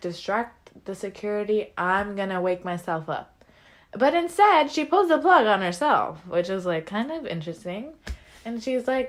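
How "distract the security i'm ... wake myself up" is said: plain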